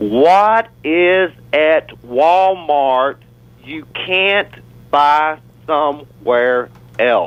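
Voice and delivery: very slow, deliberate, drawn out word by word. Putting a question to everybody, said real slow. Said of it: "I'm going to say it real slow".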